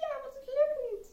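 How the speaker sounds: put-on very high, slow, frustrated little boy's voice.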